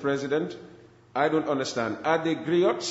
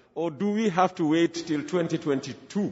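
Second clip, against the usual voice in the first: ordinary delivery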